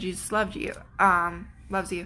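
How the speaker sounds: ordinary delivery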